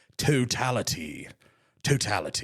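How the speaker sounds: low, put-on British accent on "totality". Deciding a word should be said in a british accent, the speaker tries it. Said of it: "I should say it in a British accent".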